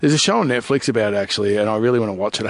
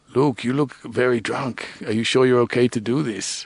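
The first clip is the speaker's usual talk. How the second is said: put-on South African accent. Retelling what the company boss said to him, in a south african accent. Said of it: "I'll try and do his accent, he's South African".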